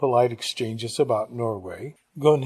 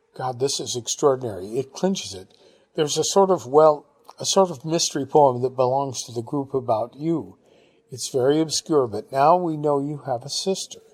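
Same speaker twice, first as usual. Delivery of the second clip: ordinary delivery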